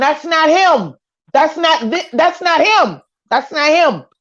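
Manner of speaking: insistent screaming, repeated over and over. Retelling what the girl who called 911 screamed, imitating someone screaming. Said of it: "standing there screaming".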